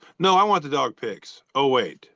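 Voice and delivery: ordinary talk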